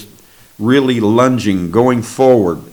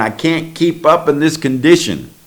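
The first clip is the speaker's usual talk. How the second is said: mock exhausted, high-pitched cry, like a scream; 5 semitones higher than usual. Retelling slowing down from exhaustion in a dream: imitating a scream. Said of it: "I was screaming".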